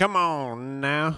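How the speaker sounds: put-on Louisiana accent. Host calling for the next segment of the show, in a put-on Louisiana accent. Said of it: "My girl loves my Louisiana accent".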